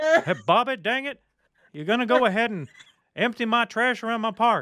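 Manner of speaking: very high-pitched cartoon character voice. Doing a Hank Hill bit addressing Bobby, in Hank Hill voice. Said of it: "I was doing the Hank Hill".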